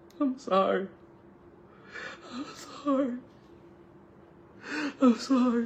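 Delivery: broken-down, slow, tearful sobbing voice. Retelling how a partner broke down crying at the door: imitating someone crying. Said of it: "broke down crying".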